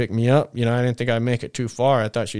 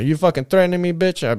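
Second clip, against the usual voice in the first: mock aggressive, threatening tone, much higher; 6 semitones higher than usual. Speaker replays what they said to a man during a confrontation: retelling an aggressive outburst. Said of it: "as soon as my tone changed".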